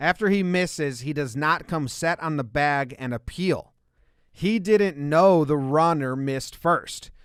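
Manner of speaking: ordinary delivery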